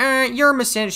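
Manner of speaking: very high, taunting, mocking put-on voice. Retelling what Bao briefly said while she was trying a mocking voice, imitating Bao's mocking voice. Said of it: "trying to do like a m- mocking voice".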